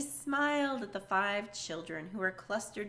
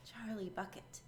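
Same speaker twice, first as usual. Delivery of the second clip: timid, small, nervous whisper, barely audible; 10 dB quieter than usual. Reading a story, the last child steps forward and gives his name in a small nervous whisper. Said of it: "a small, nervous voice whispered".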